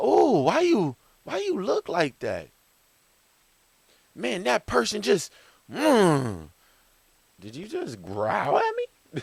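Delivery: high, mock indignant squeal.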